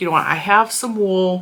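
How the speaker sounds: usual speaking voice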